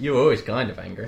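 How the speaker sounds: ordinary delivery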